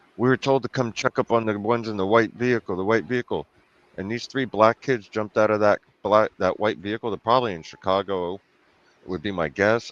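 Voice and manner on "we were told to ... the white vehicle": plain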